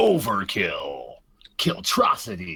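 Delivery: video game announcer voice.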